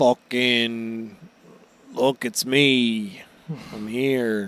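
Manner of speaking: dragged-out grungly voice, stretched me. Retelling a scene where the jailer appears in a cell: grungly Shiryu voice. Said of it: "we hear a grungly voice".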